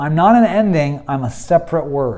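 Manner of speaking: ordinary talk, nothing marked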